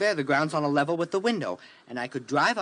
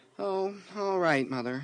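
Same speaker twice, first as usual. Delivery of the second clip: lukewarm, flat tone with no enthusiasm; 3 semitones higher, 4 dB quieter than usual. A son answers his mother, who asks how school is going: unenthusiastic. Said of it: "You don't sound very enthusiastic".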